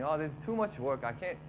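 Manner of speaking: ordinary delivery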